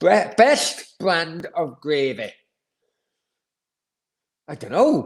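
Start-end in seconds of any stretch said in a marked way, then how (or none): 0.0-2.3 slow, unhurried Yorkshire accent. Speaker answers a listener question from Steve: Yorkshire accent. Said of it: "I'm saying it in a fucking Yorkshire accent now".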